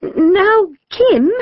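very high, trembling, quavering voice. Mrs. Hubble, a dinner lady, shuffles forward to address Kim, quavering voice. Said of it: "she said in a quavering voice".

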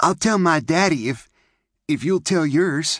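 eager. A girl speaks to a boy as their parents call them, eager. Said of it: "May said eagerly".

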